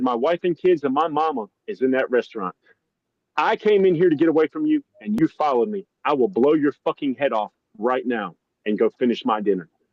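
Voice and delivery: put-on dead serious, deadly grave tone. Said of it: "just as serious as a fucking heart attack".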